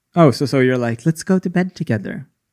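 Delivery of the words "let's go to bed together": put-on creepy voice, higher. Repeating what the other person said, in a put-on creepy voice. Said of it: "that was so creepy".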